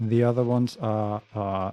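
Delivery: plain reading voice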